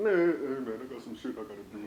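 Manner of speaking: put-on deep voice. Imitating a friend who took a while to join: imitating a friend in deep voice. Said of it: "That's the first time you ever have a deep voice".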